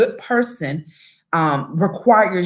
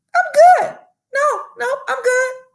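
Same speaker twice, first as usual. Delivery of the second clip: very high, insistent, overly polite voice; 3 dB louder than usual. Speaker acts out herself politely turning down help, voice going high. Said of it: "when that voice get high".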